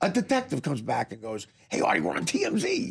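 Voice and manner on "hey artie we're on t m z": put-on eager, thrilled, pitched-up announcer voice. Retelling what a detective said in the cell: imitating an excited detective. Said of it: "Like, all excited".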